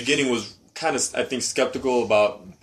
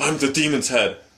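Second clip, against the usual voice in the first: put-on uppity voice; 3 semitones higher than usual. Complaining about a show character, imitating his uppity way of speaking. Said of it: "his whole uppity way of speaking".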